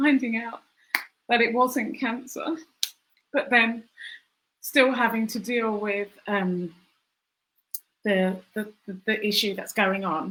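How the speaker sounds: tearful voice, close to crying. Recalling a cancer scare, about to cry. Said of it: "I think I'm going to cry".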